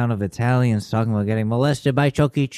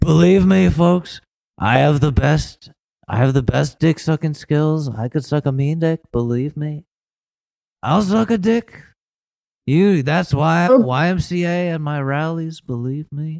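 high-pitched, boastful rally speech voice; 5 semitones higher than usual. Showing the only voice left that can be done: Donald Trump voice. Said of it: "the only voice I can do is".

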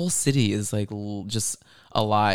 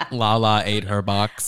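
robotic, AI-like newsreader delivery; 4 dB louder than usual. Repeating the other speaker's remark back to her, like AI reading the news. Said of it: "You said it like AI reading the news".

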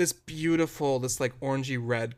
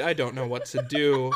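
ordinary talk, nothing marked

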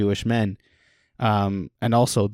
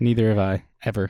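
usual speaking voice

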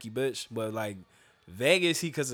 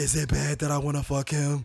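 loud, carrying stage whisper. Retelling what a woman said to her friend: imitating a loud whisper. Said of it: "whispering loud as shit".

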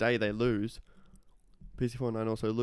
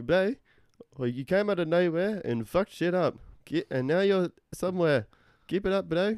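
high-pitched fake Lebanese accent. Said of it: "He's like".

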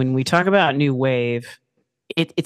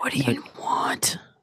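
quieter, put-on whispery antihero voice; 6 dB quieter than usual. Imitating the eye-patched antihero's line from the movie: whispering Snake Plissken impression. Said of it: "and whispering".

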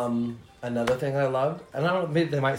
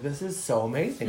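normal talking voice

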